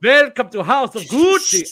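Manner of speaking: bad vampire accent, very high and very loud. Mocking an actress's accent in House of Gucci, imitating a vampire-like accent. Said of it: "Why did she sound like a vampire?".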